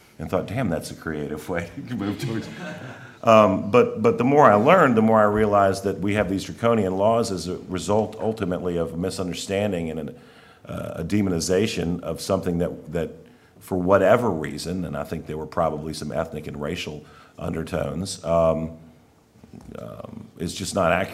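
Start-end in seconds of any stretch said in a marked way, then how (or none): 0.5-2.5 giggling, laughing through the words. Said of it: "I giggled".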